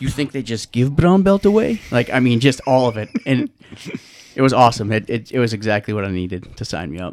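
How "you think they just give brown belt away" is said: put-on heavy, thick Russian accent, pitched up. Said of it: "he had a thick Russian accent".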